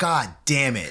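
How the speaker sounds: put-on, exasperated, frustrated outburst out loud. Retelling an awful reaction out loud in the theater: retelling own frustrated outburst. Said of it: "I out loud went".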